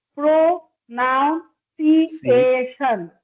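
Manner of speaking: pronunciation drawn out very slowly, one syllable at a time.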